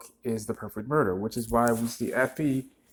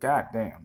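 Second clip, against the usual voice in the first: normal talking voice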